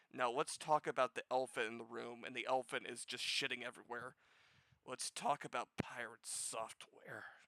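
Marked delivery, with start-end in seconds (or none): 4.9-7.3 malicious, hateful tone, much quieter and slower. Turning to the elephant in the room: malice and hatred in voice. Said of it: "you can hear the malice and the hatred in my voice".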